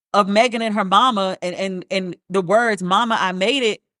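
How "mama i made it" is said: plain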